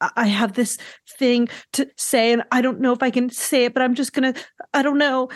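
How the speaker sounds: fake little shaky, trembly, hesitant voice. Mocking a man being talked about, imitating his fake little shaky voice. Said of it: "doing this like fake little shaky voice".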